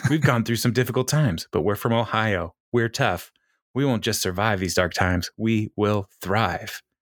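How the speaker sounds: put-on robotic voice. Retelling a congressman's stump speech run-through: acting out a robotic speech. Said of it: "totally robotic".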